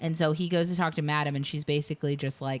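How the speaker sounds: plain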